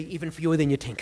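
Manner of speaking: put-on, laid-on-thick heavy New York accent. Speaker retells answering another man, in his heaviest new york accent. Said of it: "I put on my heaviest New York accent and say".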